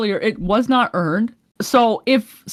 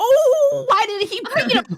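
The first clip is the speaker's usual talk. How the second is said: mock angry man voice, higher pitched.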